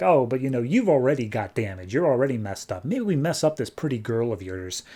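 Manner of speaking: ordinary talk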